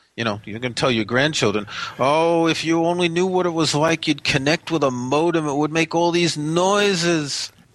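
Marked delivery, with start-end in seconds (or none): 2.0-7.5 put-on New York accent tune.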